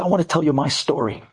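put-on Brooklyn accent. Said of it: "with the Brooklyn accent".

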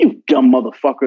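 ordinary talk

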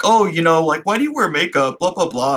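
acted-out patronizing, dismissive male ranting tone. Retelling a film scene where a date lectures her: imitating a condescending man. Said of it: "condescending kinda male diatribe".

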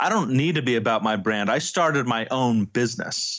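ordinary talk, nothing marked

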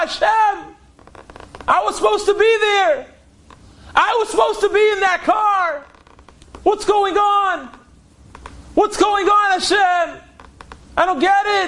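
loud screaming. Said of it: "David starts screaming".

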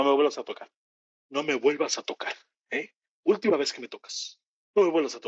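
firm, stern, fast, repeated over and over. Retelling what Jorge Salinas said to a young reporter, in a Jorge Salinas impression. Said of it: "es una perfecta imitación de Jorge Salinas".

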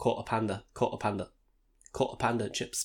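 put-on Cockney accent. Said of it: "It's like Cockney".

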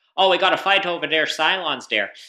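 put-on loud, high-pitched Canadian accent, belted out. Laughing with roommates after noticing the accent, as Commander Tigh in a Canadian accent. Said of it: "speaks with a Canadian accent".

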